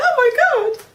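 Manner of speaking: high, loud, amazed exclaiming. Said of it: "And I was like".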